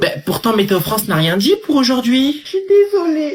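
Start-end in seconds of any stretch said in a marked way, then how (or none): 2.4-3.3 very high, tearful, still weeping. Someone apologizes for being overcome by emotion while another person asks them to stop crying, tearful. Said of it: "ne pleure pas".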